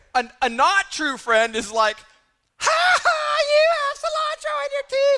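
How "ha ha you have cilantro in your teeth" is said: shrill, loud, high jeering taunt. Acting out a bad friend pointing out food in your teeth: loud mocking across a room. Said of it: "like across the restaurant".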